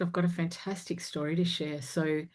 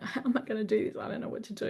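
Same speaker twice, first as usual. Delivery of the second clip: put-on high, tearful crying voice, at a loss; 5 semitones higher than usual. Recounting sitting with her best friend, unsure what to do, retelling her own crying. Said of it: "I'm crying, just going".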